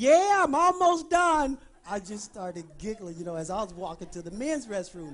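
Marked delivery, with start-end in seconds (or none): 0.0-1.6 very high, very loud, drawn-out yell. Retelling a wife answering her husband from the restroom: imitating someone yelling back. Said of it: "she yells back".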